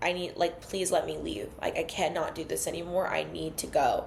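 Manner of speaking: put-on pleading while crying. Retelling begging him to let her leave during a fight, imitating crying. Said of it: "I start crying and I'm like".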